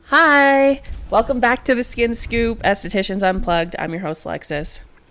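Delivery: reluctant, joyless, unenthusiastic hate-to-be-here delivery. Opening the show as host, sounding like hating to be here. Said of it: "why do you sound like you hate to be here".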